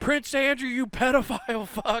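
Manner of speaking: high-pitched jeering yell. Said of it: "some guy yelled out".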